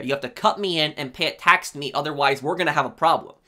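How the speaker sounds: ordinary talk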